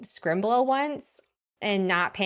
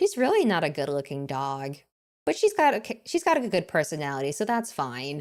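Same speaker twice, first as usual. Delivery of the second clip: put-on utterly calm, low, matter-of-fact tone; 5 semitones lower than usual. Retelling what mom said about the dog: imitating a calm, matter-of-fact tone. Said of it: "in the most calm, matter-of-fact tone possible".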